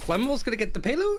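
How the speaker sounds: phrase end lifting upward on payload. Describing tournament casting, Crayon Cast upward inflection at phrase ends. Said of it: "everything ended on an upward inflection".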